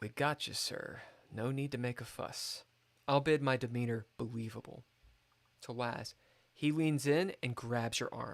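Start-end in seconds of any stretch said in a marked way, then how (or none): 0.0-2.6 hushed whisper, slower. A character leans in while the liquor is poured, whispering. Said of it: "I lean in and whisper to Marin".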